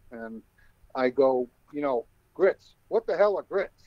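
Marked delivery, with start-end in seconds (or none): 2.3-3.6 put-on comic, pitched-up Brooklyn accent routine. Retelling a bit the speaker performed: Brooklyn accent shtick. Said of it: "I start doing this this shtick in a Brooklyn accent".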